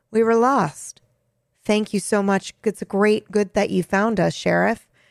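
put-on deadpan, flat monotone, no feeling. Recounting a scene where a character answers the sheriff, retelling an emotionless line. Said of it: "with no emotion in his voice".

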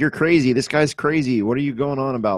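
mock screaming, shouting right back. Retelling the cab driver's reply from the translations: imitating someone screaming back. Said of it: "just screaming back at him".

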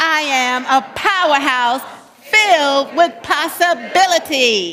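lively, very loud voice. Leading a group in repeating an affirmation again, saying it with more life. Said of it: "Put some life in it".

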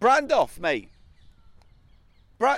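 calling out loudly. Calling out to a man they have spotted: shouting to someone. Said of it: "Don't shout at him".

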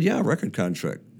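ordinary delivery

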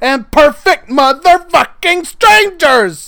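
high, loud, slow, furious yell.

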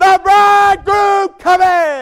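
loud, high-pitched herald-style shout. Acting out a herald running ahead of a wedding party: imitating a herald shouting.

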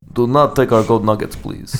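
put-on Russian accent on English. Asked to redo a voice with a Russian accent, the speaker obliges in a Russian accent. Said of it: "Can you now do that voice with that same accent, but Russian?".

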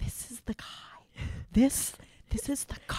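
slow, drawn-out, very quiet whisper. Retelling a film scene where she leans in to Rodney: imitating a whisper. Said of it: "she's whispering".

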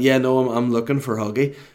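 normal talking voice

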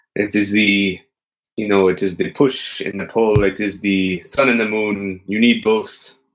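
put-on sensitive Greek youth voice. Doing a character, then calling it an impression of a sensitive Greek boy. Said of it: "that's my impression".

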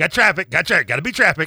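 loud, high, belted insistent urging, on repeat. Mocking the rush to leave a game: parent mixed with Rain Man. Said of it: "a mix between a parent and Rain Man".

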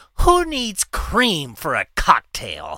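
angry, incredulous, swooping indignant outburst. Telling a story, quoting a man who got pissed at the bar, imitating his angry outburst. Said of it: "And he got so pissed".

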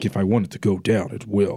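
put-on raspy voice. Imitating j g's claimed words: imitating j g's raspy voice. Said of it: "Ain't that how you sound, J G?".

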